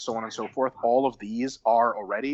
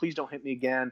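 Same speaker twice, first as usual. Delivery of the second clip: fake sobbing, tearful begging while crying; 3 semitones higher, 5 dB quieter than usual. Retelling own words while on the ground after a concussion: mock crying and begging. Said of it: "I was crying".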